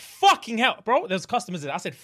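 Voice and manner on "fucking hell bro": acted scream, higher. Retelling the moment the pain hit: retelling a scream. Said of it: "I sat the fuck up and I screamed".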